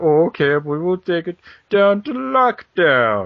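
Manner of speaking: put-on very slow, high, loud rich-boy drawl. Reenacting a wrestling feud, answering the rival: imitating Kurt Angle. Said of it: "you just got it reenacted for you".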